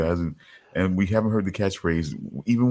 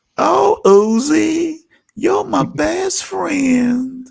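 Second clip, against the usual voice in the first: rough, very high, creaky put-on voice, "Uzi" drawn out; 8 dB louder than usual. Doing an impression of Charles, calling out to a friend: Charles impression. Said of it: "here's my impression".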